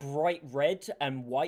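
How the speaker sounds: ordinary delivery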